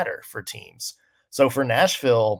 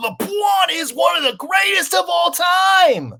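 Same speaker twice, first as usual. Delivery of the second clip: very high, loud, drawn-out shout; 6 dB louder than usual. Imitating a sports pundit's shouting: Stephen A Smith impression. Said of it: "that was my Stephen A Smith impression".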